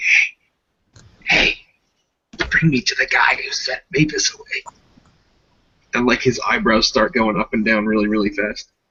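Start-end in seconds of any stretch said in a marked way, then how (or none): 0.0-4.6 uncomfortably close whisper, weird little guy voice. Voicing a weird little dude leaning uncomfortably close: whispering in character. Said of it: "start whispering at you, be like".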